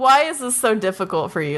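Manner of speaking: normal talking voice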